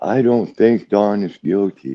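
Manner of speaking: timid milquetoast voice. Speaker told he is too loud switches to a milquetoast voice. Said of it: "I'll be like this, Kevin Milquetoast".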